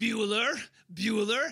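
taunting, derisive, mocking tone. A fighter taunts David while blocking his punches one-handed, mocking. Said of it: "him saying mockingly".

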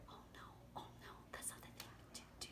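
soft, whispered mouse voice. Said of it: "both my lion voice and my mouse voice".

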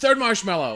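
loud, near-yelling voice. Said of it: "I wanna scream".

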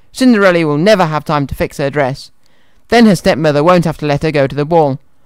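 ordinary delivery

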